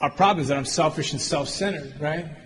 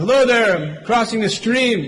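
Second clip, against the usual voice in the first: raised, pitched-up calling shout, voice carried out; 6 semitones higher, 6 dB louder than usual. Retelling a parable of a man in a rowboat: retelling a shout. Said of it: "shouts at him".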